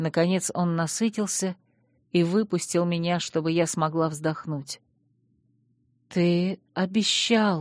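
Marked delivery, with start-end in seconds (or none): 6.1-7.6 voice shaking and quavering with the words. Reading a first-person story, the narrator voices her own reminder in a trembling voice. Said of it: "дрожащим голосом напомнила я".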